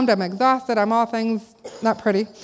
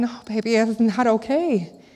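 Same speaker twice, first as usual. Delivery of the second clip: slow, tearful, put-on crying voice. Retelling comforting a child after hurting them, imitating own crying. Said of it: "I'm crying some more".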